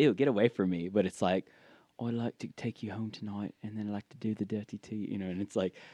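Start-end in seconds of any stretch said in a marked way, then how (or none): 2.0-5.1 put-on British accent, much quieter. Contrasting American and British ways of flirting, doing the British one: British accent. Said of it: "you just use the British accent".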